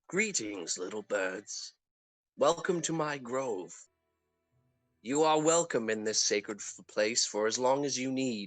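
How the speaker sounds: kindly, tender, gentle, welcoming tone. Storyteller voicing a man welcoming the listeners to his grove, in a gentle tone. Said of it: "the man speaks in a uh, gentle tone".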